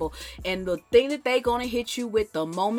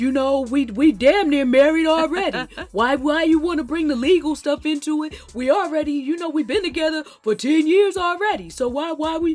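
put-on dopey man voice, loud and raised; 6 semitones higher, 7 dB louder than usual. Mocking how men talk about marriage, in a put-on man voice. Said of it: "this deserves the man voice".

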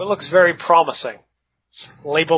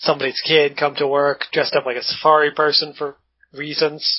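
usual speaking voice

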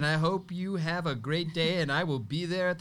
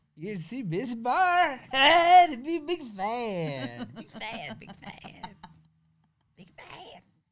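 put-on drunk guy voice, higher; 6 semitones higher than usual. Reading a text message aloud as requested: reading as a drunk guy. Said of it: "Read that as a drunk guy".

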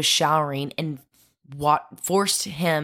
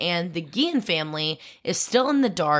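ordinary talk, nothing marked

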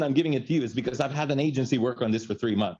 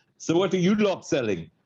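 put-on rough, not-great South African accent; 4 semitones higher than usual. Quoting a South African man making conversation: imitated South African accent. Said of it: "I don't do a good South African accent, but he goes".

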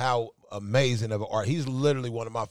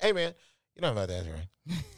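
put-on quick, rapid, mumbled speech. Describing a man's hilarious voice, a host imitates him with quick mumbling. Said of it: "and then he mumbles".

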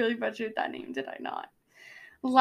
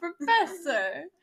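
put-on slow, higher-pitched, stretched-out thick Brooklyn accent. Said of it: "The Brooklyn accent".

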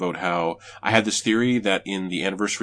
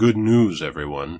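mock completely serious, straight delivery, no flourish; 2 semitones lower, 3 dB louder than usual. Answering how she says the line, mock-serious. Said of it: "she says it very serious".

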